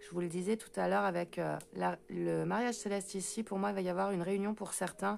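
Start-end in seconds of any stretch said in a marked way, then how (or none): 3.4-5.2 fast, rushed delivery. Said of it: "Faut que j'arrête de parler aussi vite".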